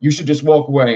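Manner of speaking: put-on half-yell, held back, toned down. Retelling what he said back to the man: imitating his own yelling. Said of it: "I'm yelling it".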